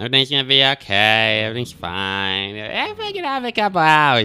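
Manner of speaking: breezy, upbeat, high swooping tone, "fine" stretched. Retelling what the guy seated next to him said, imitating an upbeat optimist. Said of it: "That was literally how he sounded".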